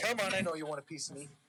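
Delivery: ordinary talk, nothing marked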